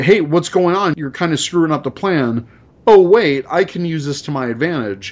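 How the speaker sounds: normal talking voice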